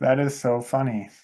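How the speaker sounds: ordinary delivery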